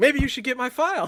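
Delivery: put-on, shrill, very high-pitched yelling. Retelling how he yelled at the guy: imitating someone yelling. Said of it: "And he's yelling at the guy".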